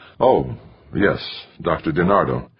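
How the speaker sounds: ordinary delivery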